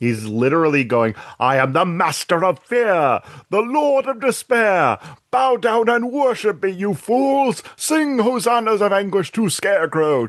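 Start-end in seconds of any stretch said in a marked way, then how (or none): 1.4-10.3 very high, swooping, scene-chewing hammy villain voice. Recounting a scene, the speaker acts out Scarecrow's speech, scene-chewing Scarecrow voice. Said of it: "the most scene chewing".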